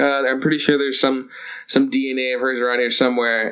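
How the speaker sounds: ordinary talk, nothing marked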